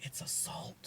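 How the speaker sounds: hushed, sneaky whisper, barely audible, very quiet. Retelling hinting the prize answer to a customer: imitating saying it really quietly. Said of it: "I would say it really quietly".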